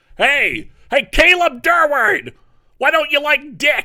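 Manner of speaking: very high, loud, slow shout.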